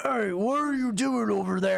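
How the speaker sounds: gruff, rough, creaky monster voice. Voicing a bugbear who catches the players: bugbear voice. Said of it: "the same bugbear".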